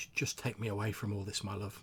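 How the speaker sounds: faint, weakened, trembling, quavering voice. Voicing a stabbed wife speaking to her husband: weakened, quailing voice. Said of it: "in a sort of quite a weakened, quailing voice".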